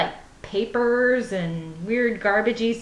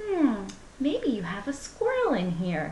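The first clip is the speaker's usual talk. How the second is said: soft, sweet, shy, timid, worried little voice; 5 dB quieter than usual. Upstairs in a bedroom, the speaker retells talking to Chris, imitating sweet shy worried voice. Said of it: "in my sweet little shy, I'm worried about this voice".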